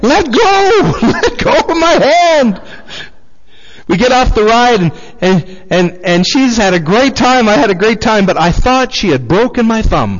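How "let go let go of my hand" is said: very high, slow, drawn-out shrieking scream. Retelling a ride where she crushed your hand, retelling a scream. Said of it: "I'm screaming".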